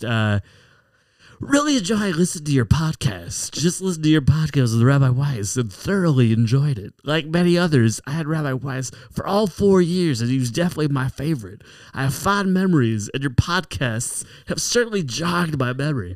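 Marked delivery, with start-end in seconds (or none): 1.4-16.2 put-on old baseball announcer voice, higher pitch. Reading a listener's letter aloud: Harry Caray voice. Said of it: "I'm gonna read one of these letters as Harry Carey".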